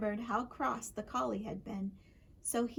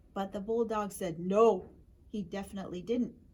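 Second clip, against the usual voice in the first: plain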